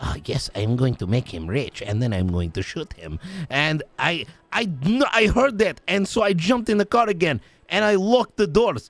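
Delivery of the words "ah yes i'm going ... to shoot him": mock very low whisper. Retelling how another person muttered to himself: imitating a very low whisper. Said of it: "he was whispering, like, very low to himself".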